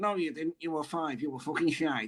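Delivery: soft monkey-puppet voice. Recalling a coach who spoke to players through a monkey puppet: manager's monkey-puppet voice. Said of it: "Through the monkey".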